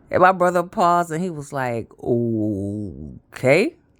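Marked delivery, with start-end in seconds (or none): 2.0-3.7 very low, deep, stretched, drawn-out delivery. Retelling the brother's reply to the pregnancy news: imitating brother's deep voice.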